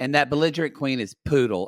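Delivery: ordinary delivery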